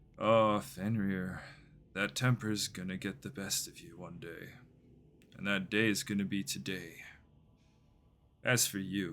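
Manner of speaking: wicked, taunting, cruel smirking menace in the voice. Narrator voicing Bon as he taunts Fenrir, with a cruel, wicked smirk. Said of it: "It's a cruel, wicked smirk".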